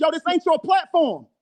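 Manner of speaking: shouting.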